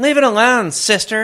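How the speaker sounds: slightly feminine voice. Showing the other speaker how they would say a written line, slightly feminine voice. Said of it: "you do the slightly feminine".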